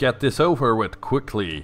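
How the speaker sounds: plain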